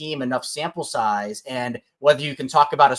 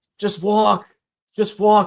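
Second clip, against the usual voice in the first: mock high-pitched screaming; 6 semitones higher, 4 dB louder than usual. Retelling yelling at a teammate at bat in a kids' playoff game: imitating own screaming. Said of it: "I'm screaming at him".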